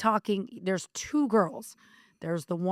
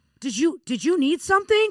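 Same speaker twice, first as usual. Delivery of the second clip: put-on loud, raised voice, called out; 8 semitones higher, 6 dB louder than usual. Retelling someone's reply after being tapped, imitating someone saying it loudly. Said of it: "all loud, so everybody could hear".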